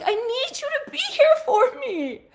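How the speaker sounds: very high, loud, crying, tearful voice. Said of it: "in tears".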